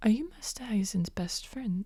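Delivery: toned-down soft voice. Speaker acting out a female character's question to another character: lowered voice. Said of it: "she does lower her voice".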